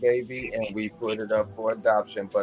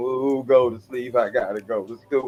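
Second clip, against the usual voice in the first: weepy, tearful, pleading voice broken by sobs; 2 semitones higher than usual. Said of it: "Sounded like Natty off The Color Purple".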